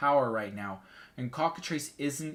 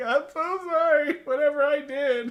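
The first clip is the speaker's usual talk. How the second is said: loud, very high, drawn-out weeping; 7 dB louder than usual. Describing an enemy's reaction after being approached: imitating someone crying. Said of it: "just starts crying like".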